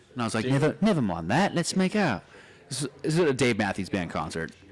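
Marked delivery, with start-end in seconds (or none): 0.5-2.2 faked, put-on British accent. Retelling what he told girls at a concert, in a british accent. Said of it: "get girls with a British accent".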